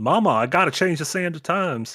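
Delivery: joking, put-on Southern American accent. Mocking a game hero whose accent changes with time travel, in a joke southern accent. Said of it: "a joke British or a joke American accent".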